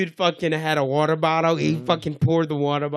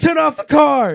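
very high, loud yelled shout; 10 semitones higher, 7 dB louder than usual. Retelling seeing a car fire from the road: retelling a shout. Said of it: "I just shout out".

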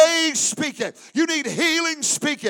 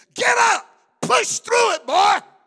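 put-on coach voice, screaming, pitched high; 6 semitones higher than usual. Retelling a coach's morning encouragement: imitating a coach screaming. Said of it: "screaming at me".

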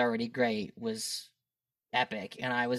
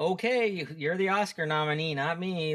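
put-on, slow, playful jokey ribbing; 5 semitones higher than usual. Recalling teasing Dean about a shot: retelling a joking remark. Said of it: "I would kind of jokingly go".

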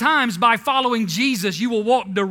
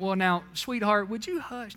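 put-on sweet grandma voice, much quieter; 8 dB quieter than usual. Saying Jesus did not address the storm like this, the speaker does a put-on sweet grandma voice. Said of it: "I picture a little sweet grandma".

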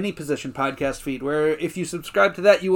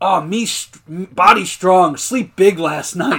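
put-on caveman voice; 7 dB louder than usual. Recapping a scene where two characters check on Kevin, doing Kevin's caveman dialect. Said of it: "Caveman dialect".

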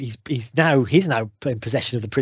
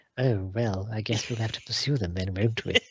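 put-on deadpan villain voice, much quieter; 2 semitones lower, 7 dB quieter than usual. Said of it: "pale face and deadpan".

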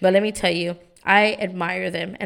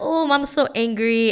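put-on cute little toddler voice, spoken slower; 4 semitones higher than usual. Mother imitating her three-year-old son noticing she's upset, in his cute little voice. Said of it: "he has like this cute little voice".

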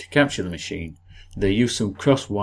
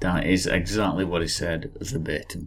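ordinary delivery

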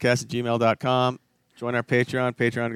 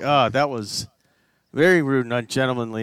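usual speaking voice

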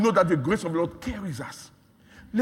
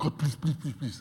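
mock crying, pleading, lower and quieter; 4 semitones lower, 7 dB quieter than usual. Preaching that God wants people to act: imitating someone crying and begging God. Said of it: "you are crying".

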